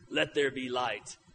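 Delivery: deep, dark, hushed monotone, low and dead level. Describing how people picture God on a mountain, deep dark monotone voice. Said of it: "in his deep, dark, monotone voice".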